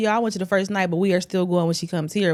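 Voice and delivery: ordinary talk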